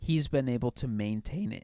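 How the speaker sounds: voice cracking and breaking. Speaker makes an argument to a co-host when the voice cracks. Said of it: "Oh, voice crack".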